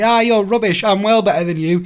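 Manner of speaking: loud, high, put-on crowing, gloating jeer. Retelling how Lauren gloated after winning an arcade kart race: imitating Lauren gloating. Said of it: "and the gloating you should have heard".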